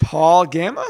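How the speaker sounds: rising upward tune on the word Gamma. Reading out a name to pronounce: saying a name like a question. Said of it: "I say all these like a question".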